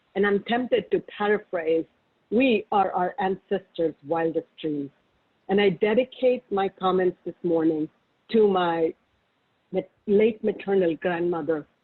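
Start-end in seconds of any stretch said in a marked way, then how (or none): none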